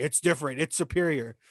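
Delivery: plain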